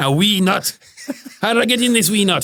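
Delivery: high, comic put-on Scottish accent. Speaker, asked for a Scottish version, repeats the nutshell quote in a Scottish accent. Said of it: "Can you do it in a Scottish accent?".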